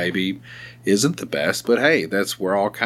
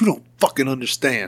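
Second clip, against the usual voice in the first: high-pitched growling close to microphone; 5 semitones higher than usual. Retelling pointing a finger and speaking into the microphone: imitating a growl. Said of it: "growling into my fucking microphone".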